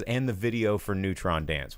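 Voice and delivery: ordinary talk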